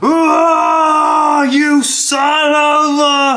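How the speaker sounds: long, tumbling, very high, very slow falling yell. Voicing a kicked dwarf falling down a shaft: dwarf shouting while falling. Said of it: "you just hear Trout".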